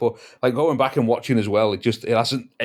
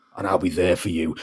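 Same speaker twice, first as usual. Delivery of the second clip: weird, angry, low, menacing growl; 5 semitones lower than usual. Imitating how an actor ends his lines as Garth, in a menacing Garth growl. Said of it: "a menacing, he goes".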